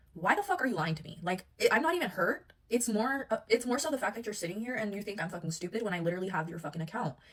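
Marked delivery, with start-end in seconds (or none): 0.2-1.2 acted out, furious, livid anger. Speaker retelling confronting a man she caught lying, retelling an angry outburst. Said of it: "I am livid".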